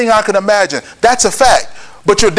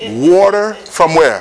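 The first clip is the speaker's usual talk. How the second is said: very slow, deliberate, drawn out word by word; 4 semitones lower than usual. Telling listeners the story of water from a rock, saying it slowly. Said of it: "Let's say it slow".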